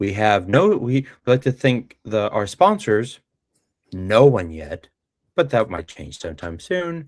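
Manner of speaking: public radio announcer voice. Podcast host wrapping up the show, going back to his NPR voice. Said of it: "I will go back to my N P R voice".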